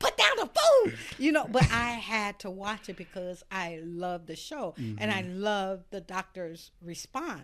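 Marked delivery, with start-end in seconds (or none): 0.0-0.9 very high, very loud, shrill scream. Retelling how she screamed at a TV show at home; retelling screaming at the TV. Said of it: "I would be screaming like".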